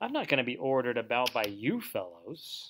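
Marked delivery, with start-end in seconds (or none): none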